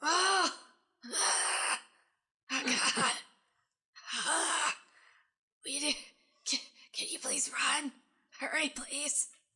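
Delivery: put-on high, wheezing creature voice. The bat sitting on a character's shoulder speaks up, wheezing bat voice. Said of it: "it kind of wheezes".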